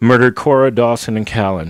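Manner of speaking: plain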